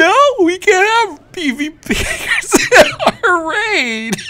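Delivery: put-on very high, slow, drawn-out crybaby wail. Retelling how raiders complained about PVP power: imitating crying raiders.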